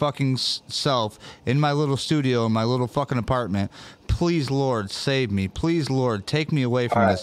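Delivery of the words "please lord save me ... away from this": tearful, crying, pleading voice. Retelling a prayer made four nights before an accident: reenacting a crying prayer. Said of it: "literally crying in my beer".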